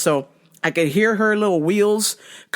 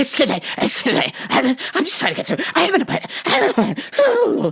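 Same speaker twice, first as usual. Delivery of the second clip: mock, very animated, breathless, pitched up, no pauses; 6 semitones higher than usual. Retelling a sweaty lady trying to get through: imitating someone animated and breathless. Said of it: "Just so animated, not taking a breath".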